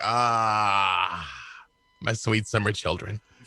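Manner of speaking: very slow drawl with long drawn-out "Ah". Picturing wizards at toga parties, then voicing Mystra's reply: imitating Mystra. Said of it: "and Mystra's just like".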